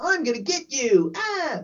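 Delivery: shrill, super high-pitched villain voice. Speaker describing to a co-host how a female character sounded: very shrill voice. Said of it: "Very shrill and very like".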